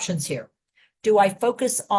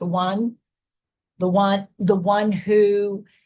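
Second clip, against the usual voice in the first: drawn-out, spaced-out, slowed and deliberate repetition. Demonstrating a repeated phrase, slowed down before a pause: slowed-down delivery. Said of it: "I also slowed it down a little bit".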